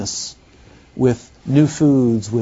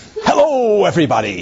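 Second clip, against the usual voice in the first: theatrical, Shakespearean stage actor's thespian voice; 7 semitones higher than usual. Describing how an outgoing person greets a room, in a thespian Shakespearean actor voice. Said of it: "that thespian voice of the Shakespearean actor".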